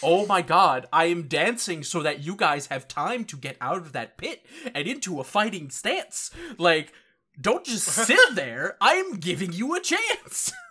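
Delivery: mock exasperated, annoyed rant. Retelling a character's rant at Ganju and Ichigo, mock-angry. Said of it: "he gets real pissed".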